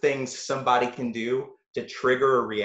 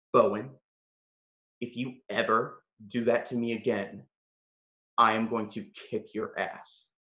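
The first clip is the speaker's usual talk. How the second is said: very quiet, hushed, barely above a murmur; 3 semitones lower, 5 dB quieter than usual. Retelling what another guy said to him after a tense moment; retelling a very quiet threat. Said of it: "very quietly".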